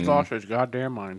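speaking with mouth full of food. Co-host answers before swallowing his food, talking with mouth full. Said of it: "You want to try that one more time after you swallowed?".

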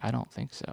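sadly spoken. Recalling answering a friend's question at a birthday party, retelling a sad answer.

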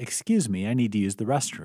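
ordinary delivery

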